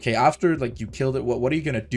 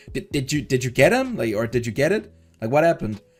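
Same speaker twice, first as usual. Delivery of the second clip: ordinary talk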